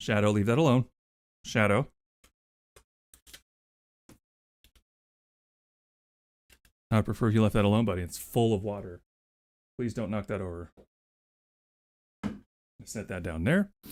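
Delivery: scratchy-sounding voice. Telling the dog shadow to leave something alone, with a scratchy voice. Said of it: "you hear that scratchiness?".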